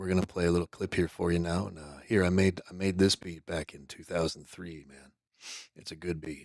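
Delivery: soft, hushed, half-whispered radio patter. Retelling how Tabby Benedict talks on stream: imitating Tabby Benedict half-whispering. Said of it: "he's just whispering into the microphone".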